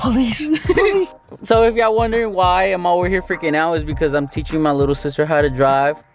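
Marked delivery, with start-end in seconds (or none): 0.0-1.1 mock panic, pitched much higher. Teaching a little sister to drive, stopped at a stoplight, reenacting panicking. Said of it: "I was panicking".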